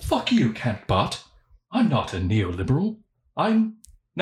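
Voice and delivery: slow, drawn-out, badly done British accent. Talking about Nick Land, the speaker tries a Nick Land British accent. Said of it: "I'm just going to do a British accent".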